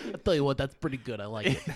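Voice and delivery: approving, praising football coach voice. Repeating what the coach said about the impression, imitating Jon Gruden. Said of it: "Gruden comes up to me, he goes".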